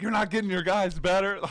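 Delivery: furious, high, loud yell. Retelling a game where Red yells at a player stalling the clock, imitating Red yelling. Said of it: "Red's yelling at him like".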